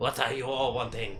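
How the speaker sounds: attempted, put-on French accent. Voicing a large fish orc-looking man who approaches the group: attempted French accent. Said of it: "I don't know if I've done French at all".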